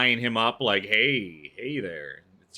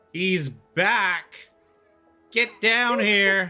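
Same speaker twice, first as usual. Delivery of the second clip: very high, very slow, drawn-out calling voice; 9 semitones higher, 4 dB louder than usual. Voicing a dock worker calling to the ship behind her: calling out loudly. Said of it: "she kinda calls out behind her".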